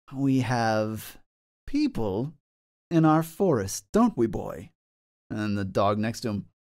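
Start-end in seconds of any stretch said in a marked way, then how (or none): 0.1-4.7 slow call-out with "have" stretched out. Voicing a cloaked stranger emerging from the woods toward the party: calling out. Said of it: "they'll call out to you".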